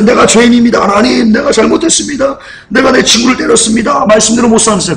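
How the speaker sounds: high-pitched, put-on sobbing. Retelling words said in class after hitting a friend: imitating own past crying. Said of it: "제가 막 울면서".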